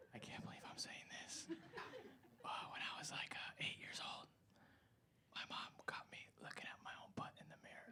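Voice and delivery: very quiet, barely audible hushed whisper. Told to whisper a secret, the speaker tells one: whispering. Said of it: "But you have to whisper it".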